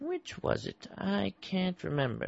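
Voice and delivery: muttering indistinctly. In a drama, a man asked for his name answers: mumbling. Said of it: "You're mumbling".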